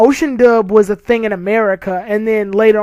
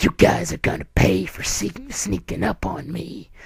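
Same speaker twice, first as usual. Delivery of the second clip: hushed, breathy evil villain voice; 2 semitones lower, 8 dB quieter than usual. Describing how Piccolo sounds in the dub, evil Piccolo voice. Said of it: "this weird, like, evil, Grady voice where he's like".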